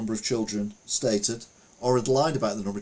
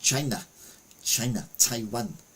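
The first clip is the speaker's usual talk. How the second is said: faltering put-on voice, slipping in and out. Reading a news story aloud, attempting a Donald Trump voice. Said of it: "I can't do his voice anymore now".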